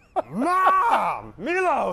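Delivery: drawn-out, growly, barking yell. Coached to add more growl, the speaker calls to ma, in a drawn-out growling call. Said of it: "Why did you drag it out".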